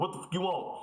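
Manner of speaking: rude, curt manner. Acting out an ordering scene, playing the worker: playing a rude Popeyes worker. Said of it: "I'm gonna be the worker".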